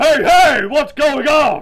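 loud wrestler shout. Taking a turn at impressions, the speaker does a loud peaky Hulk Hogan impression. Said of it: "He's just really loud and peaky".

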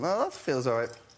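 ordinary talk, nothing marked

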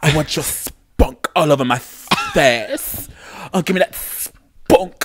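mock British adult-film delivery. Quoting what a british person says in porn: imitating a british porn line. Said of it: "coming out of a British person's na-, mouth".

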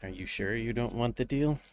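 soft, smooth voice. Narrating a tabletop game, the speaker voices the Chimera offering a player a deal. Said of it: "the silky smooth voice".

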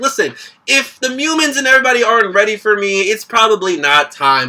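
ordinary delivery

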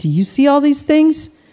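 heavily sarcastic mocking tone. Explaining a passage and acting out a quoted remark, retelling it sarcastically. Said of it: "Jesus says very sarcastically".

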